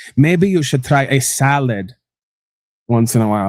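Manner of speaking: heavy sarcasm with a rude tone. Imitating a doctor scolding patients: imitating the My 600-lb Life doctor, sarcastic. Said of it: "real sarcastic and rude with the".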